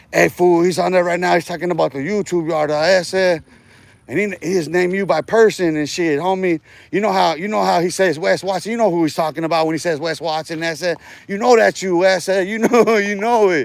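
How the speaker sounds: ordinary talk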